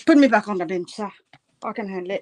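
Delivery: loud, put-on British accent. Answering a remark about going back on the bench, british accent. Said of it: "talking in, in a British accent now".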